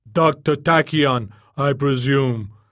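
very slow, booming loudspeaker-style delivery. The shell speakers greet Dr. Tachyon from far above the alleys, booming. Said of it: "boomed the shell speakers".

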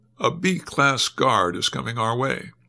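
ordinary delivery

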